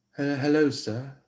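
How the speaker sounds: put-on British accent. Speaker demonstrates how a woman might greet a man, in a british accent. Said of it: "like a uh, British accent".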